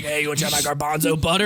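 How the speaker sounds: lurking, too-friendly, sleazy creepy-uncle voice. Acting out a creepy uncle offering food: imitating a creepy uncle. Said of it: "sounds like someone's creepy uncle".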